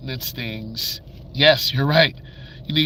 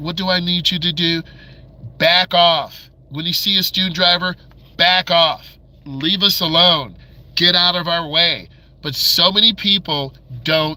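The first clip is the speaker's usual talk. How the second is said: raised, exasperated, fed-up voice; 3 semitones higher, 4 dB louder than usual. A driving instructor addresses impatient drivers, raised voice, fed up. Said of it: "I'm raising my voice".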